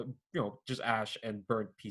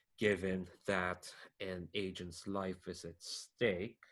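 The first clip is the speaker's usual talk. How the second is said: very slow, deliberate, every word drawn out; 3 dB quieter than usual. Agents questioning Agent Bubbles about a term, speaking very slowly. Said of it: "they're saying this really slowly as well".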